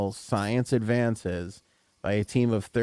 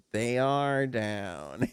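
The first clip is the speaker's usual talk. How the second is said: put-on cartoon kid voice; 3 dB quieter than usual. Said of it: "it was like Louis' voice".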